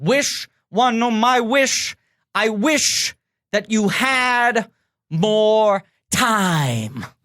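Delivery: long pauses between words. Quoting a favorite line reading: long pauses between the words. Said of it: "spaces it out like that".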